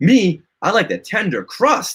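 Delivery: keen, thrilled, excited, eager enthusiasm. In a comic ad, a villain offered fruit pies by the hero replies, excited. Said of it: "He's excited".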